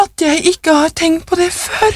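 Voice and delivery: hysterical, very high-pitched outburst. A woman bends down, kisses him on the cheek, then speaks hysterically. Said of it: "sa hun hysterisk".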